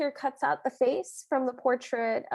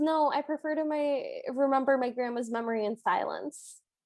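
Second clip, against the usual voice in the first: plain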